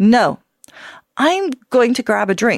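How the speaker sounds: steady, firm, decisive, no-nonsense tone. Instructor demonstrating how to turn down pressure to smoke, firm voice. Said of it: "say no with a firm voice".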